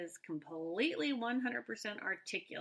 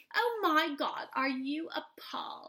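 put-on mocking voice, higher and louder; 5 semitones higher, 5 dB louder than usual. Retelling how one person mocked another: imitating Victoria's mocking tone. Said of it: "She's mocking Alea".

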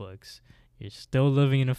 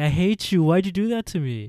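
mock angry, furious, accusing outburst, raised and high; 7 semitones higher, 6 dB louder than usual. Retelling a story, imitating a girl angry at a prank: imitating a furious girl. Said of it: "Jill is furious".

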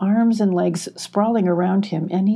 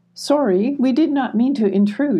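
timid, bashful, higher pitch; 5 semitones higher than usual. Emmy answers the queen spider blocking the exit, shyly. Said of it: "explained Emmy shyly".

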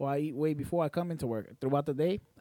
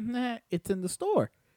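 high, dead-serious, matter-of-fact tone; 7 semitones higher than usual. Recounting answering her question about the missing slice, retelling a serious reply. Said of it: "I was being serious".

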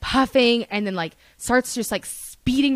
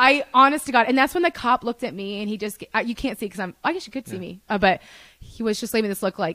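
usual speaking voice

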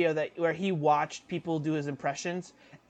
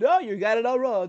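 loud, confident, dismissive brush-off tone; 6 semitones higher, 6 dB louder than usual. Showing how a politician talks with confidence: Donald Trump impression. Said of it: "It's like".

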